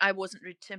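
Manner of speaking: ordinary talk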